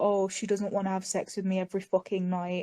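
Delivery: ordinary delivery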